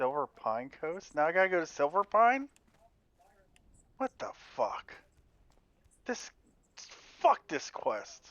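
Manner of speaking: angry swearing outburst, swooping pitch. Reacting to a quest that sends them to Silver Pine: getting pissed off. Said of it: "I'm getting pissed off right now".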